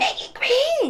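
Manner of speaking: put-on birdlike voice, way up high. Quoting a co-host who talked to them in a bird voice, imitating a bird voice. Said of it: "talking to me in your bird voice".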